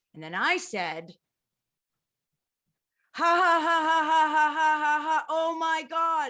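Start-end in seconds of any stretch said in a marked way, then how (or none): 3.2-6.3 loud, high, freaking-out mock laughter. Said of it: "'cause I was freaking out".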